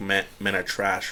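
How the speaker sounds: ordinary talk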